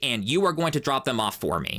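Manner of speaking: spoiled, presumptuous, bratty, demanding tone. Retelling a customer's demand on the phone: imitating an assuming, bratty tone. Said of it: "she said it in a very assuming, bratty tone".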